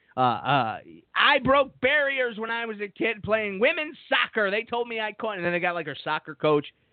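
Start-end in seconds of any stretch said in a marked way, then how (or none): 1.1-5.3 most irritating voice, pitched very high. Imitating a candidate's campaign ad: imitating an irritating voice. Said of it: "she has the most irritating voice".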